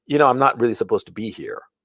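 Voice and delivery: imitated, mock-conspiratorial voice. Retelling words a man said to him about Dartmouth, imitating a conspiratorial voice. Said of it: "in this conspiratorial voice".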